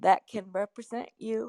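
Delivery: words stretched by yawn. Speaker relaying someone's suggestion, yawning while talking. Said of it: "I'm sorry, I'm yawning".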